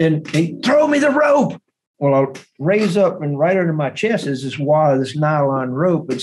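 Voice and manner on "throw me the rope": mock scream, higher. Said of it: "in the water screaming at me".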